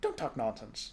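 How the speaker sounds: usual speaking voice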